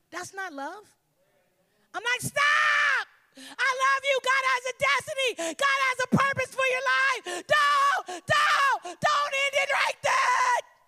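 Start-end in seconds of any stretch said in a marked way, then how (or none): 2.2-10.6 drawn-out, very slow, loud, high-pitched screaming. Explaining why he yells at people headed toward danger, acting out screaming. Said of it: "I'm a little loud and I'm screaming at you".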